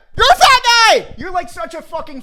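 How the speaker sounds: very high, loud, furious angry shout. Describing mean thoughts finally bursting out, retelling a shout. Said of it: "they just got louder and louder".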